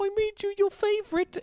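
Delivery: put-on very high voice with a slight Cockney accent. Retelling what he said as he put down a plate, in a slight Cockney accent. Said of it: "talking with a little like Cockney accent".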